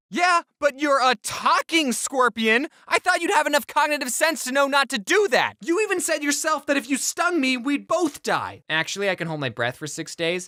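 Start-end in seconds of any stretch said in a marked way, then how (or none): 0.2-8.7 high, animated, exclamatory, outraged cartoon fox voice. Telling the fox and scorpion fable, voicing the stung fox: acting out an outraged fox. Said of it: "And the fox really wanted some of the grapes. / And so he tried to get them himself".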